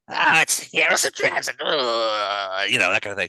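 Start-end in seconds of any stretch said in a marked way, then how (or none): 0.2-1.6 high little imp character voice. Voicing a small imp that scuttles out before the heroes: voicing an imp. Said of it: "and he's like".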